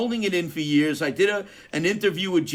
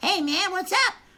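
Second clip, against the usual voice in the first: goofy, put-on, very high silly voice; 13 semitones higher than usual. Retelling how he used to make bandmates laugh: imitating his own old silly voice. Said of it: "I used to talk like this and go".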